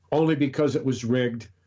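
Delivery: plain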